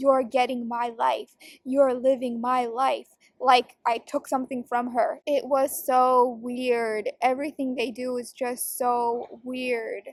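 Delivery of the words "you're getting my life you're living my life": put-on scornful, contemptuous, resentful, accusing tone. Retelling what she used to say, imitating a scornful tone. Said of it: "staring at me scornfully, saying".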